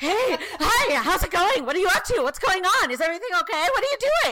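put-on very high, loud, wired babbling chatter. Speaker acting out how they talk after coffee, acting out sounding like a meth addict. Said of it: "I sound like a meth addict".

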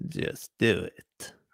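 hushed, breathy whispered villain voice. Asked for an impression of a film villain: Emperor Palpatine voice. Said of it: "can you do your best, Emperor Palpatine?".

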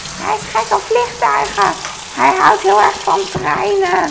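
high creaky witch voice.

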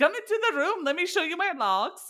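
high-pitched, put-on Swedish accent. Imitating a woman inviting someone in: Swedish accent. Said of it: "I don't know why I'm making her Swedish".

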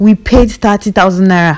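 mock loud shouting in raw anger. Retelling a phone call with a policeman who asked for money: imitating own angry shouting. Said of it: "I just shouted".

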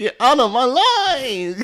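booming, very high, loud, deliberate, drawn-out voice. Retelling what someone said on set: imitating Chan's voice. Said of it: "in a Chan's voice".

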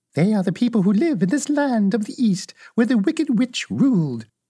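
sweetly spoken. A little old woman answers Dorothy's question about the Munchkins, in a sweet voice. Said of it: "But the little old woman walked up to Dorothy, made a low bow, and said in a sweet voice, ... and said in a sweet voice".

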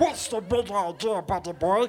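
put-on cartoon duck voice. Retelling making Donald join in scolding a child: Donald Duck voice. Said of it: "I even made Donald join in".

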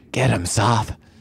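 hushed, muttered whisper under breath. A player's character urging Soth on, whispered under breath. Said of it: "whisper under my breath".

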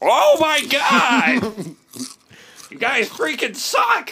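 very high cartoon voice with swooping pitch. Starting an improvised episode, playing Shake: Shake impression. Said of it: "Shake doesn't sound like that".

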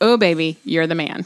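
dry, flat, unenthused tone. Demonstrating encouragement that won't help the guy, in a dry tone. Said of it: "Such a dry tone".

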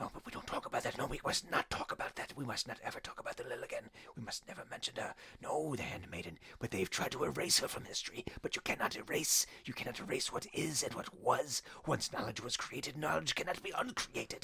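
frantic, crazed, repetitive, hushed whispered muttering. Voicing a cast-off heretic drow met in the game, muttering crazily to himself. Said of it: "Him muttering crazily to himself, apparently a heretic. / but you do remember encountering a male drow that was cast off. It was a castaway. Him muttering crazily to himself, apparently a heretic. He".

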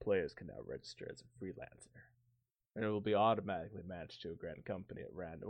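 low, sultry, sexy voice, close on the mic. Reading patch notes close to the mic, sounding like Patrick Warburton. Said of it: "Why do I sound like Patrick Warburton?".

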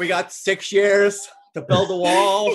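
loud, slow, drawn-out put-on voice. Teasing another speaker's impression by imitating Donald Trump. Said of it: "does Donald Trump just go".

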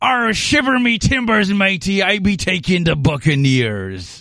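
stock pirate-talk voice. Showing the group what pirates sound like: pirate voice. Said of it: "I'm good at doing pirates".

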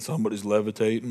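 breezy, matter-of-fact, nonchalant delivery. Retelling a testimony's casual line: imitating John, nonchalant. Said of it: "nonchalantly said".

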